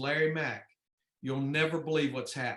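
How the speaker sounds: very grave, solemn, somber delivery. Retelling a race, the speaker imitates Davey coming on the radio, in a somber voice. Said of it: "in a very somber voice".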